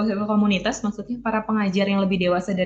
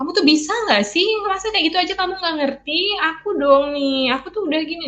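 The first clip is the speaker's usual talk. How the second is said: high-pitched, belittling, complaining tone; 8 semitones higher than usual. Acting out words women use that belittle husbands: put-on high-pitched tone. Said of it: "Nah itu tuh udah nadanya tinggi".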